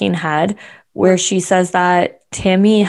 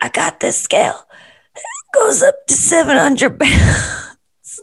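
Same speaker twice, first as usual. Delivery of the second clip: very high, squeaky put-on voice; 10 semitones higher than usual. Doing an impersonation of Chris bringing a weigh scale: Chris impersonation. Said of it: "do your Chris impersonation".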